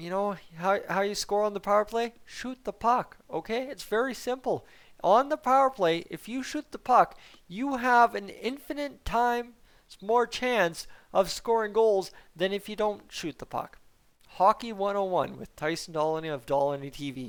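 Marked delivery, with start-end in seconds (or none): 0.0-13.8 high, put-on sarcastic voice, a little rude. Giving viewers some hockey 101 on power play scoring: put-on sarcastic, a little rude. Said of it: "Be a little bit sarcastic here with you".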